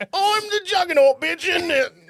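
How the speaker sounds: high, put-on Cockney voice. Joking about the Juggernaut line in a Cockney accent: Cockney Juggernaut voice. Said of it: "pretty close to what he says".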